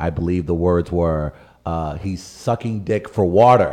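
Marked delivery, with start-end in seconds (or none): none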